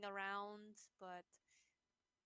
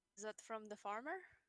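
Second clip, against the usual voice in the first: ordinary talk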